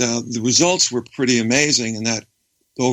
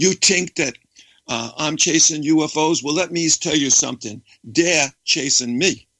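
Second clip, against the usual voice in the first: put-on native New York accent, natural speech pattern; 4 semitones higher than usual. Retelling your joking reply to people asking if you chase UFOs, in your best New York accent. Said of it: "in my best New York accent".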